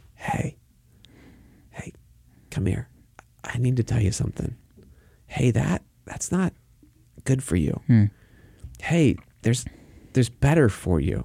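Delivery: put-on soft fatherly tone. Acting out a father who doesn't shout correcting his kids: imitating a father not shouting. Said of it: "the voice of a father who's not shouting".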